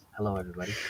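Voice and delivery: soft, quiet, hushed voice. Imitating a late-joining new daddy who is half-whispering: imitating Raul half-whispering. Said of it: "that's why he's whispering, talking like this".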